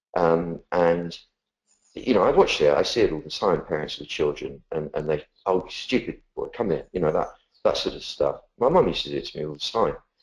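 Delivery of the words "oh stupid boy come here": mock scolding, slightly bullying tone. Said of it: "did so in a slightly bullying way".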